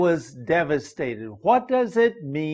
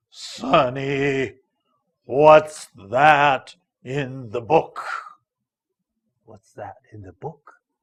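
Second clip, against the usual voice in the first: low, gruff growling voice; 2 semitones lower than usual. Reading aloud a story where Mister Grant growls at Sonny: very low gruff growl. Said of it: "he spoke to me in a very low and a very gruff, uh, voice".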